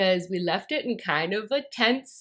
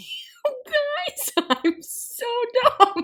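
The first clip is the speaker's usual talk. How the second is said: giggling through words, very high, slow, drawn out; 4 dB louder than usual. Explaining a silly mistake while reading, laughing while talking. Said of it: "I can't stop laughing at myself".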